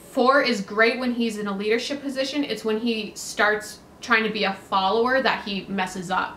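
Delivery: ordinary delivery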